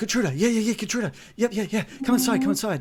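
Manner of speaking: high, rapid, eager dog voice, words tumbling. Voicing the dog Scallywag hearing his owner's name: excited talking dog. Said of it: "it's excited, like".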